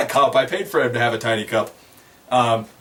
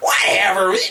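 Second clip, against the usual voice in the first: pitiful, whiny, punchable-sounding goblin voice; 7 semitones higher than usual. Imitating the voice he makes for goblins: whiny goblin voice. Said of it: "that fucking whiny noise voice he makes for goblins".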